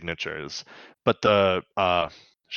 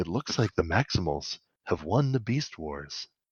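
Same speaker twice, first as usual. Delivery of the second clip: soft, mock, faintly mournful tone; 7 dB quieter than usual. Retelling Optimus staring into the camera, in a mock almost-sad tone. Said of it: "he kind of says it in like a like a almost a sad tone".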